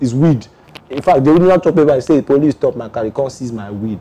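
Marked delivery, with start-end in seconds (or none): none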